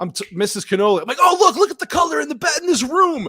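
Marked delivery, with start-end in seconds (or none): 1.2-3.3 very high, loud, screaming shouting outburst. Retelling watching a film, imitating own screaming. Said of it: "I'm screaming".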